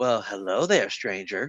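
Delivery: coy, flirtatious talking-computer voice. Voicing a computer greeting a player who plugs in: voicing a flirty computer. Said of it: "the computer immediately goes".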